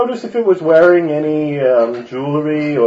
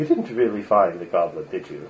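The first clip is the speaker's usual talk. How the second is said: very low, dropped, hushed voice; 8 semitones lower, 9 dB quieter than usual. Retelling a conversation, the speaker repeats his own question in a lowered voice. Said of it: "I kind of lower my voice".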